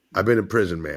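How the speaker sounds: low, grave, dead-serious delivery. Retelling a man's serious warning after being called a name: imitating a serious lower voice. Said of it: "and he was real serious".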